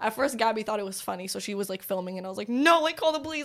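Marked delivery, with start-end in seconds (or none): 2.5-3.5 high, frantic, panicked, desperate, freaked-out voice. Retelling urging someone who was filming to call the police, retelling freaking out. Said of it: "Like I'm freaking out".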